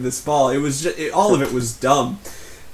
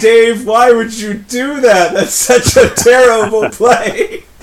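loud, high-pitched, drawn-out complaining shout; 9 semitones higher, 8 dB louder than usual. Recounting watching another player's stream after the point, retelling his shout. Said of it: "he's shouting".

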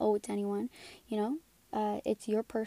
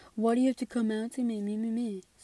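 mocking, derisive take on an offended, upset voice; 3 dB louder than usual. Talking about coming out, mimicking the upset homophobes: mocking impression of homophobes. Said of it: "that's my imitation of them".

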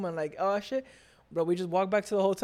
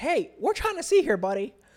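put-on pitched-up blue-collar Midwestern accent; 6 semitones higher, 4 dB louder than usual. Retelling what a woman said to a guy, in a Midwestern accent.

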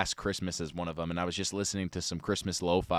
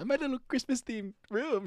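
put-on tiny, very high little girl voice. Describing his Christmas-themed bedroom, mocking his own words: little girl voice. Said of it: "Sound like a little girl right now".

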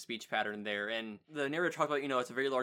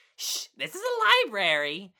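very loud, very slow, swooping sing-song delivery; 9 semitones higher, 10 dB louder than usual. Retelling a cartoon goose's line in a library: imitating saying it loudly. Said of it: "she's saying it loudly".

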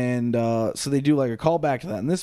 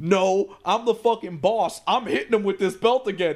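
loud hollering yell; 8 semitones higher than usual. Retelling a match where Cody refuses the ref's order: imitating Cody yelling at the ref. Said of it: "yells at the ref".

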